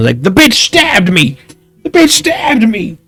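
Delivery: acted-out pained yell. Describing what the stabbed one shouts, retelling a shout in pain. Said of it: "the one you stabbed is just shouting".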